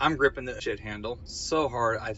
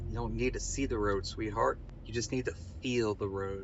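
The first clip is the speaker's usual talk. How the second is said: close, whispered voice. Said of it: "I whisper".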